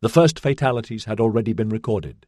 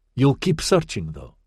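plain reading voice

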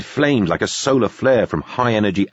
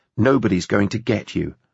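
ordinary delivery

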